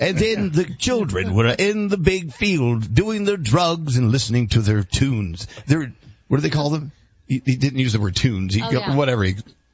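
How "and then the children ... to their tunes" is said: put-on old-time, old-fashioned broadcaster announcer voice. Asked how to do it, speaker demonstrates the reading style: announcer voice. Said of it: "You must read like an announcer".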